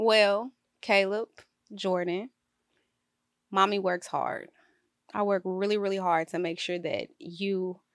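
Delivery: emotional, close to tears, fighting them back. A mother speaking a message to her two boys, holding back tears. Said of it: "I'm about to tear up".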